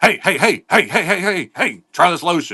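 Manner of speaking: high, insistent, pushy salesman voice. Complaining about being pestered at the mall, imitating a pushy mall salesman. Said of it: "the dude's like".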